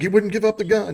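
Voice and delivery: high-pitched, startled tone. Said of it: "He's like".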